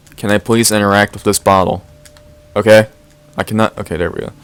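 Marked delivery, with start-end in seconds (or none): none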